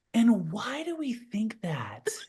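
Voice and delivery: motherly, empathetic, slow, sing-song tone. Imitating Sherry's questions during feedback: imitating Sherry's empathetic tone. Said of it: "her tone of her voice changes".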